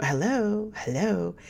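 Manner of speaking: proper, polite telephone voice. Recalling how their mother answered the phone, the speaker uses her proper phone voice. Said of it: "answer the phone with her proper voice".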